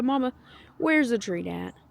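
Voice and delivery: put-on voice as dog. Speaking as the dog coming up the steps for a treat: voicing Moose the dog. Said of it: "He's like".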